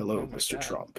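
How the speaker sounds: hushed, breathy, soft and totally unbothered. Imitating RFK Junior speaking during an earthquake, sounding like Keith David. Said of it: "He sounds like fucking Keith David".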